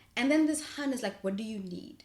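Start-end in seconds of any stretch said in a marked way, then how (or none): 1.3-2.1 put-on South American accent. Retelling what a helpful stranger asked: imitating a South American accent. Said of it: "She sounds like she's from South America".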